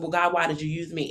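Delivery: put-on angry voice. Retelling praying after getting hurt, questioning god: retelling being mad. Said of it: "I was mad at God".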